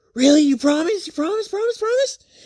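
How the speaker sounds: put-on very high, rushed, squealing childlike pleading. Retelling a character's eager question after she stops crying: imitating an excited child. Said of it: "like a little child getting candy".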